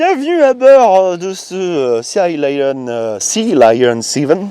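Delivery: very slow, attempted, put-on American accent. Welcoming people aboard the Sea Lion 7, trying an American accent. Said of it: "J'essaie de parler avec un accent américain".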